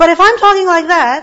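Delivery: full-on, loud, high-pitched shouting. Showing students the difference from speaking loudly: shouting. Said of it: "I'm shouting".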